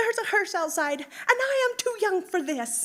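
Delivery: very high, very loud, shrill, swooping excited squeak. Speaker retells a woman spotting a hearse outside: imitating her high squeaking. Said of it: "She started squeaking".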